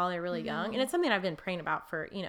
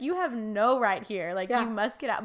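put-on sassy voice, higher and louder; 3 semitones higher, 5 dB louder than usual. Retelling what she says aloud to anxious thoughts: imitating her own sassy voice. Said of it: "I have, like, sass with it".

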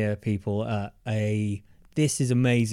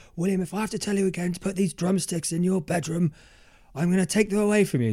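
fake cross telling-off, pitched up; 8 semitones higher than usual. Retelling how a father scolded him about drumsticks: imitating dad pretending to be pissed off. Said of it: "pretending he's all pissed off".

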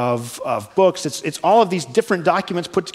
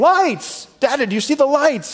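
put-on high, excited, thrilled child's scream; 9 semitones higher than usual. Retelling a child in the car spotting lights: imitating Truman screaming.

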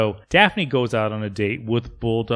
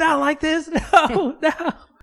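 mock, very high, drawn-out, terrified, panicked wail; 3 dB louder than usual. Retelling how Bulldog is dragged out of the limo, imitating Bulldog screaming. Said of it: "he's screaming".

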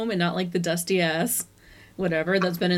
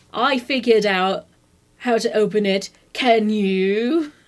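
fake British accent, loud and very slow; 5 dB louder than usual. Retelling a movie scene where a character appears, bad British accent. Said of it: "that was the worst British accent I've ever done".

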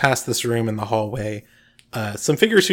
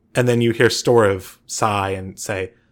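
ordinary talk, nothing marked

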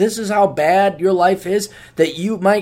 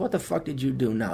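put-on condescending man voice, lower, quieter; 7 semitones lower, 11 dB quieter than usual. Speaker retells how a man with a cigar talks to him: imitating condescension. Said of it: "he'll look at me condescendingly".

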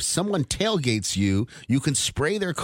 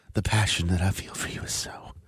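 mock intimate whispering, lower; 7 semitones lower, 3 dB quieter than usual. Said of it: "too whispery and intimate".

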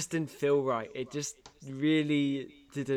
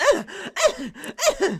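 very high, loud, shrieking, screaming cries; 8 dB louder than usual. Imitating a film actress screaming when bitten by a vampire: imitating a screaming actress. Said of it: "bitten by the fucking vampire and screaming out loud".

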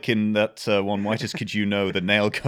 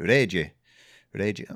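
put-on, fake Japanese accent. Wondering whether mimicking a name sounds silly, fake japanese accent on reiji. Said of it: "are we just putting on a fake accent like".

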